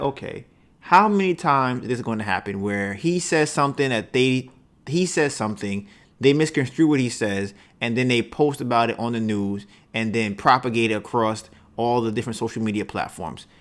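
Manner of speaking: usual speaking voice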